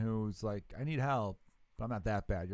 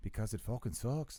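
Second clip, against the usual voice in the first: put-on Mexican accent; 3 dB quieter than usual. Imitating an asylum interviewee answering why they can't go home: put-on mexican accent. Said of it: "I was trying to do, like, a Mexican guy".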